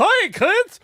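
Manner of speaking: shrill, very high, very loud cartoon voice. Trying out an impression, attempting a Mickey voice. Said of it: "significantly higher".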